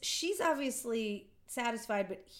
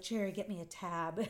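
put-on smug tone, quieter, slower; 4 semitones lower, 4 dB quieter than usual. Retelling a scene where a woman comes out of a room, imitating a smug tone. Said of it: "she's all like smug about it".

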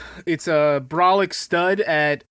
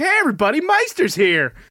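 put-on excited voice, higher; 7 semitones higher than usual. Imitating a friend entering a room: imitating a friend's excited greeting. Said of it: "he just gets really excited genuinely".

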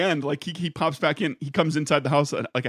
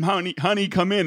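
put-on scream, higher pitch; 4 semitones higher than usual. Retelling a wife calling her husband in during a tornado: imitating wife screaming. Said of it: "she was screaming at him".

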